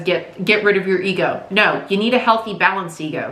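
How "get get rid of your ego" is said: ordinary talk, nothing marked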